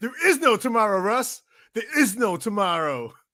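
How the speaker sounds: fake American accent, badly done. Repeating a quoted line after calling it a bad impersonation, bad American accent impression. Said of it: "That's my American accent".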